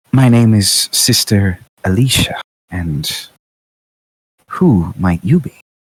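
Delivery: voice calling out across the room. A game master voices Sister Alicia calling out to the group, soft calling voice. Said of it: "a voice call out to you softly".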